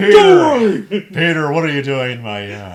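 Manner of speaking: very loud, swooping yell, name stretched out. Doing a cartoon character's line to the others: Joe Swanson voice. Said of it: "I'm Joe Swanson".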